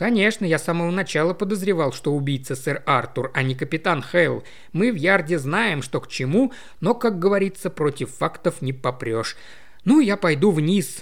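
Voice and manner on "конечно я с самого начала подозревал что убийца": usual speaking voice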